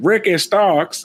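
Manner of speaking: slight put-on Louisiana accent. Quoting how someone said a name, imitating a Louisiana accent. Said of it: "did a little bit of a Louisiana accent".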